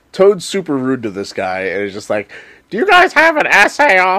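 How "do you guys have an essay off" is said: squeaky cartoon voice, very high pitch. Retelling Toad being rude to a guy, in a squeaky Toad voice. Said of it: "I was trying to do a squeaky Toad voice".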